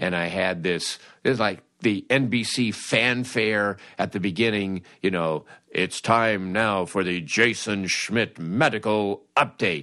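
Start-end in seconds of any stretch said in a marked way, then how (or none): 5.7-9.8 deep, announcer-style voice. Recreating the intro you made for a segment, in a deep announcer voice. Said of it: "real deep voice announcer".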